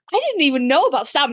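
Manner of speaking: thrilled, bubbly, excited, eager delivery. Retelling what the other speaker said on learning about Sam: imitating someone sounding excited. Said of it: "you sounded so excited".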